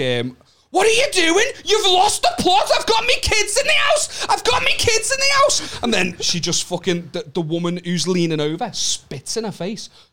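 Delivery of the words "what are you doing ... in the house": very high scream, rising and building as it goes. Telling a story about an altercation, retelling a woman's screaming. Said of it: "starts screaming like".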